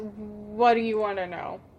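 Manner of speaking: exasperated, deep sigh. Voicing an exasperated character answering a player, exasperated with a deep sigh. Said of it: "has a really deep sigh and goes".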